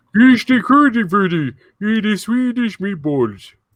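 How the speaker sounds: very high, loud put-on Swedish accent. Told to go ahead in front of the fellas, do your Swedish Chef impression again. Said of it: "I'm going to do my Swedish chef impression again".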